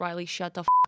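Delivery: put-on bone-dry, fed-up, deadpan Boston monotone. Quoting a woman's reply to the speaker's Boston-accent talk: mimicking a deadpan monotone. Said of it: "super monotone".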